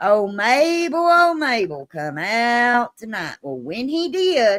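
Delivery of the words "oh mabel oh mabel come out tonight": loud hollering voice. Telling a story, the speaker acts out someone calling out, retelling a loud holler. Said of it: "He hollers out real bad, out loud".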